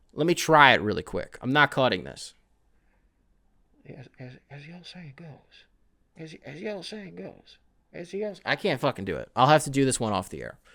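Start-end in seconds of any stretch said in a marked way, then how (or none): 3.9-8.4 hushed, soft voice with some twang. Testing an idea about how to do the impression, George Bush as Joe Biden with twang. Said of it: "Joe Biden with a little bit of twang".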